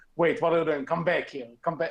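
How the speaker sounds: ordinary delivery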